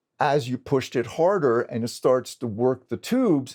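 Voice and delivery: normal talking voice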